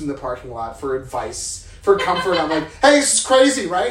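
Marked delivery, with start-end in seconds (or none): 2.8-3.9 frazzled, loud, high-pitched. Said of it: "approach strangers ... for comfort".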